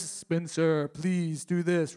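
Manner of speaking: deep booming voice. A speaker imagines God calling him by name, booming voice of God. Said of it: "I've never heard what I suppose is the booming voice".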